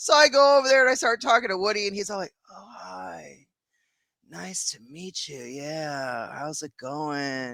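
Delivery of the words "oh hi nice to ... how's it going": put-on acted, hushed, drawn-out, very slow stoned drawl. Retelling meeting Woody at a gathering, imitating Woody sounding stoned. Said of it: "he was high as fuck".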